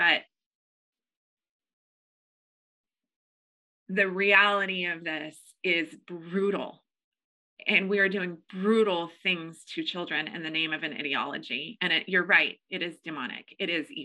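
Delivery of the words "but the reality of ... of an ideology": in tears, tearful voice. Having just apologized for the tear while talking of people's ruined lives, go on, tearful. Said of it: "I'm sorry for the tear".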